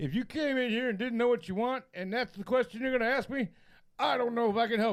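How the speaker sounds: put-on displeased, fed-up, annoyed older man's voice. Retelling how an older guy replied to a first question: imitating an unhappy older guy. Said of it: "he was not happy to hear this at all".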